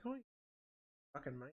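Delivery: soft, hushed put-on British accent, under the breath. Speaker shows the voice they sometimes put on: British accent. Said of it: "or like a British accent".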